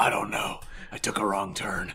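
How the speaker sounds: breathy, near-whispered voice. Answering as if visiting the studio: Danny Glover impression. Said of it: "Hey, Danny, what are you doing in the studio here?".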